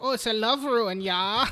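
put-on German accent. Retelling a story's plot, voicing a character's reply in a put-on German accent. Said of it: "I like that you're giving them all these accents".

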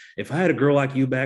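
put-on loud, poor Kentucky accent. Recounting his monologue to her, quote him in a very bad Dan Stevens Kentucky accent impression. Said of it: "a very bad Dan Stevens Kentucky accent impression".

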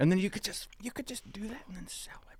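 hushed whisper. Speaker keeping a secret from other people, whispering. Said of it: "I'm whispering because I don't want people to know the secret".

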